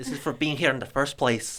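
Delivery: put-on Scottish accent. Showing the scottish accent learned from a movie: scottish accent. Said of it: "the Scottish accent".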